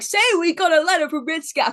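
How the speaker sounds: loud, high-pitched puppet-host voice. Retelling a live TV puppet introducing the show, in Bullwinkle voice. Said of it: "The puppet goes on. He's like".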